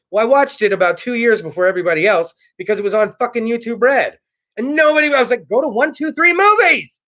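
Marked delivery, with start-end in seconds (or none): 5.5-6.8 high-pitched, loud, urging yell. Retelling what was said to people about Cobra Kai: imitating own yell. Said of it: "I was yelling at the people".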